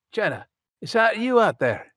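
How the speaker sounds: very high-pitched, loud yell, calling out. Game master voicing Gavin as he spots a woman coming back, Gavin yelling out. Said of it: "old man".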